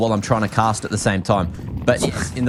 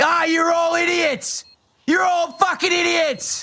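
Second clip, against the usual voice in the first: mock rant, very high and drawn-out. Quizzing the others on map places, then a mock angry outburst. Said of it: "that's my crash out for the day".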